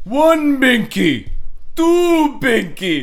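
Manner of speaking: put-on very high-pitched vampire-accent voice. In a bit about counting binkies, doing the Count voice.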